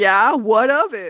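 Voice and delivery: put-on sassy voice. Retelling the boxing coach's reply: imitating a sassy comeback. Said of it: "sassed back at me".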